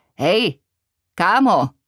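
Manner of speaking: calling out loudly. Frankie calls out to his buddy; shouted. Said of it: "křikl Frankie".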